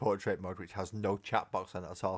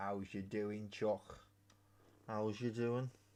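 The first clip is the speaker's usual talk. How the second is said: put-on Liverpool Scouse accent; 8 dB quieter than usual. Streamer relays a viewer's chat question, in a Scouse accent. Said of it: "It's just me doing that accent".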